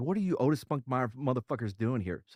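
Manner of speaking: imitated angry sergeant voice. Retelling what an angry platoon sergeant said on coming out: imitating an angry sergeant. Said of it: "so he's, uh, angry".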